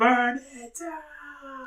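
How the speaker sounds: mock wrestler shout, high, slow and drawn out.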